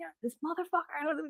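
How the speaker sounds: very high, muttered angry cursing. Retelling being pushed off the road by a car: imitating own angry cursing. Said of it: "'cause I'm cursing by myself in the car".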